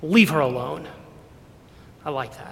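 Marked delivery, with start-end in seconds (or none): 0.0-0.9 put-on harsh scolding tone. Retelling a verse where a scolder is rebuked, acting out a harsh rebuke. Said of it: "and I imagine in a harsh tone".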